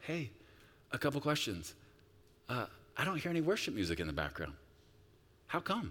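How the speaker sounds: sugary, sweetly sarcastic tone. Retelling own words to an overwhelmed woman on a call: sweet and sarcastic, retelling own words. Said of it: "sweetly and sarcastically go".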